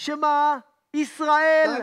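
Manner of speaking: loud shouting, yelling. Saying the line again to a listener who keeps interrupting: shouting. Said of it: "למה אתה צועק?".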